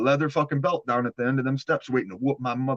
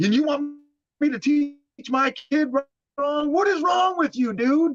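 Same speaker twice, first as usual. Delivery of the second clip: put-on screaming, cussing rant, higher; 14 semitones higher than usual. Retelling a father's rant at a judge: imitating dad cussing and screaming. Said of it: "I hear my dad cussing and screaming".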